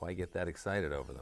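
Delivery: ordinary delivery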